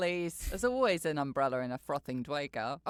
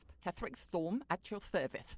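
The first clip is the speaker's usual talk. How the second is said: quieter speech with a put-on lisp; 8 dB quieter than usual. Voicing a character you want to have a lisp: put-on lisp. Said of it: "I want him to have a lisp".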